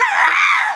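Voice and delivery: very high, loud terrified scream.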